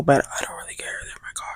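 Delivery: soft whisper.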